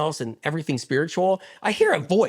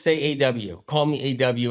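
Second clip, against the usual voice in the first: plain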